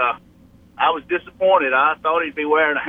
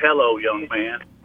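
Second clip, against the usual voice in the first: put-on low-pitched, grumpy old voice; 5 semitones lower than usual. Speaker recalls Coach Bryant greeting him, imitating Coach Bryant's grumpy old voice. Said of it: "in that grumpy old voice and said".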